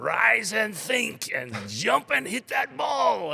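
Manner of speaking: very high, rough, loud yelled call. Retelling what a loud doctor called out on the courts: imitating a loud vocal player. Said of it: "he just was very vocal".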